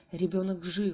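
ordinary delivery, nothing marked

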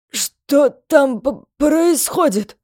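stuttering, frightened. After a wild scream outside, a fat man in the bar asks: stuttering mumble. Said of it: "Заикаясь, пробормотал толстяк".

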